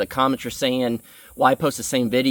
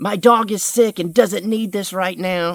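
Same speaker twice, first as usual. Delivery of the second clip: mock upset, angry, high scolding yell; 7 semitones higher than usual. Retelling a woman complaining that his truck was too loud, retelling someone yelling. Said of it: "started like yelling at me".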